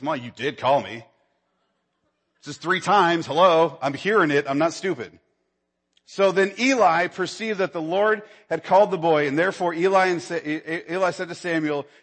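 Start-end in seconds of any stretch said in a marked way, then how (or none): 0.0-5.2 put-on sassy, talking-back kid voice. Retelling the boy answering Eli the third time: sassy Samuel impression. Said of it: "you know how kids get a little sassy".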